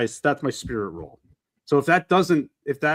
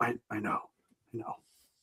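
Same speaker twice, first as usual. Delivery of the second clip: barely voiced, hushed whisper under the breath; 3 semitones lower, 12 dB quieter than usual. Roleplaying a character watching her ride away, whispering under their breath. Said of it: "I just whisper".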